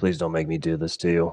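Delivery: soft, grave, almost somber delivery. Everett, aiming his blaster at the perp, pleads with him: somber. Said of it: "almost somberly say".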